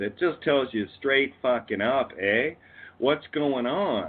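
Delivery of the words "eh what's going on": overdone, played-up Canadian accent. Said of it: "the elocutionary aspect of the Canadian accent".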